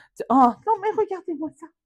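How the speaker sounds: high, daft, doting cutesy voice. The speaker shows the voice that comes out around animals: silly cutesy voice. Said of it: "avec une voix un peu coconne comme ça".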